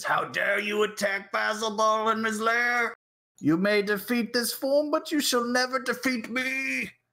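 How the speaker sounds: very high, raging monster voice, big angry shout. Voicing Basilball shouting at the group in his lair, Basilball's big angry shout. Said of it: "he shouts with his big angry voice".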